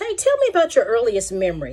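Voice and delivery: ordinary delivery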